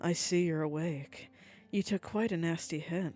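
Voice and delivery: low, seductive voice dripping with sultriness. Narrating a story, she speaks up behind the listener as they wake: low, sultry voice. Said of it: "A low voice, dripping with sultry tones".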